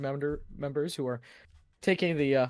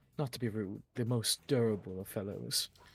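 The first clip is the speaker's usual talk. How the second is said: quiet, half-whispered aside; 4 semitones lower, 5 dB quieter than usual. In a roleplay scene, a character eyes a companion up and down, half-whispering. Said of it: "she whispers to all you".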